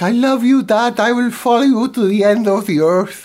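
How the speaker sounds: high-pitched, loud Mexican accent.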